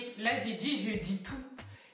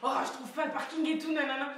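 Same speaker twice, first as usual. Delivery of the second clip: high, fast, irritated and worked-up complaining. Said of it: "commence à s'énerver".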